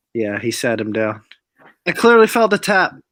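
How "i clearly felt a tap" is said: put-on Dutch accent, raised and high. Quoting a fighter's claim about the fight: Dutch accent. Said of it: "Is that your Dutch accent?".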